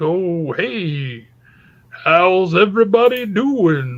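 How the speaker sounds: very slow, lumbering, big giant voice. Describing a Lord of the Rings movie scene, imitating a big humongous Ent. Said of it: "this big, humongous dude is like".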